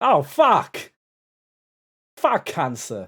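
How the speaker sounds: very loud, swooping, poorly done Australian accent. Trying an accent they admit they're not good at: bad Australian accent. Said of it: "tell cancer to get fucked in an Australian accent".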